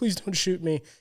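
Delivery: tearful, crying, begging voice. Retelling a drunk man begging a cop not to shoot, imitating a man crying. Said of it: "And the guy's like crying".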